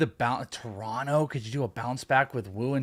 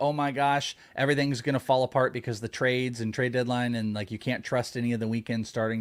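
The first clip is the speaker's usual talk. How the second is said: usual speaking voice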